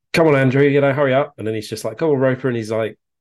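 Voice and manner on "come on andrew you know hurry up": mock, playful, raised, high encouraging shout. Recalling urging on someone behind on the course, retelling a joking shout. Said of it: "sort of shouting encouragement".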